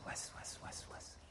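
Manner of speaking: soft, hushed, breathy whispering sound.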